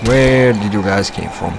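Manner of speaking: ordinary talk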